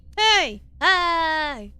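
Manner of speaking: loud, high screaming with "hi" dragged out. Calling to a companion who stared blankly: screaming. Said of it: "could you please stop screaming at me?".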